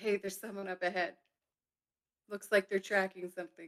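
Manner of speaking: whispering in a character voice. Speaking in character to Valen during the game: whispering in character. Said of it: "all I can speak is in a whisper".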